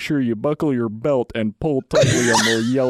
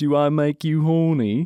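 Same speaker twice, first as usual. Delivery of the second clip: full groovy British spy voice; 3 semitones higher than usual. Asked to perform, a speaker gets into it and does an Austin Powers impression. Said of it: "I do a little bit of an Austin Powers".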